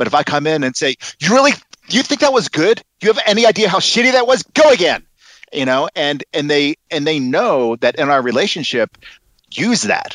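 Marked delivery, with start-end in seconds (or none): 1.2-5.1 very high, harsh, lashing-out scolding tone. A director demonstrates giving notes to an actor, lashing out at an actor. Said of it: "I start lashing out".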